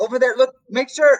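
stuttering frantic speech. Voicing a character stammering a warning to an ally: stuttering frantic warning. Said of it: "He stutters, attempting to warn me".

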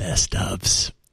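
hushed whisper, under the breath. Near the end of the year, teasing what's coming, whispered. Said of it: "I'm whispering it".

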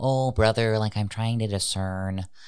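tiny, squeaky, very high helium-like voice. Acting out an imaginary directee who comes with a question: high helium-like voice. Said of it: "stop inhaling helium".

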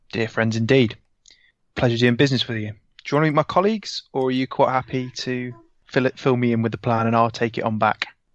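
ordinary talk

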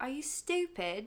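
put-on British accent, authoritative British voice. Recounting how a former boss insulted the speaker, imitating his british accent. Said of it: "in his British accent".

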